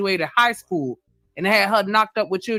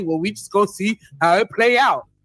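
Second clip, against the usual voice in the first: put-on boyish, kid-like young boy voice. Retelling the other man's answer in the role play: imitating someone talking like a boy. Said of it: "You talking like a fucking boy".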